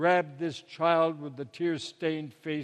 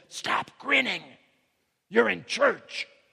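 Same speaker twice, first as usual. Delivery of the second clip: loud, theatrical stage whisper meant to carry; 4 semitones higher, 3 dB louder than usual. Reading a story of a mother scolding her child in church: stage whisper. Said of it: "in a stage whisper".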